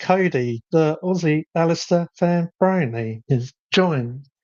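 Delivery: synthetic, robotic text-to-speech announcer voice. Imitating the streaming program reading chat names aloud: imitating a robot voice. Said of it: "that very robot voice".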